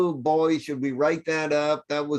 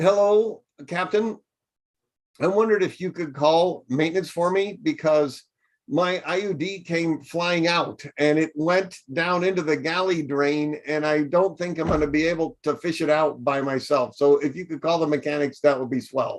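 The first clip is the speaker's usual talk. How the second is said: normal talking voice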